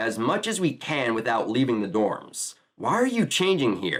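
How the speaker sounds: ordinary delivery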